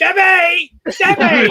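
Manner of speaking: very high, very loud, shrill booming holler. Show the others what to throw in every once in a while, in a put-on Riv accent. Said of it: "you got to go".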